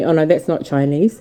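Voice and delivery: ordinary talk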